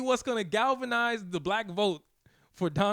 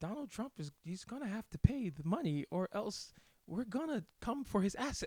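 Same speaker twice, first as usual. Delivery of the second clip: real soft, hushed, soft-spoken voice; 9 dB quieter than usual. Speaker imitating a woman's news soundbite, real soft voice. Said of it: "Real soft voice".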